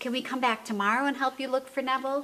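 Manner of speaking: ordinary talk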